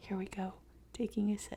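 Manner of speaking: quiet whispering. Starting an ASMR segment on the show: whispering. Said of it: "You have to whisper it".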